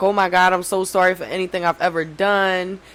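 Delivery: put-on tearful crying voice. Retelling calling mom after a night of heavy drinking: imitating own past crying. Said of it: "I called my mom crying".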